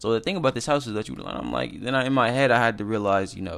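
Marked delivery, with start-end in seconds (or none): 0.0-1.2 fast, rushed patter, stumbling over words. Retelling talking to clients, imitating own rushed fast talking. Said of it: "'cause I'm tripping all over my words".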